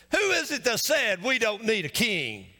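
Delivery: mock haughty, lofty, arrogant, swooping tone. Acting out the people's challenge about Saul to listeners, in a mock-arrogant tone. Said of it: "They're saying it with arrogance".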